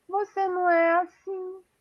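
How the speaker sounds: tiny little voice, very high, slow, drawn out. Retelling how she reacts to the speaker talking fast, imitating her little voice. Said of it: "com aquela vozinha dela".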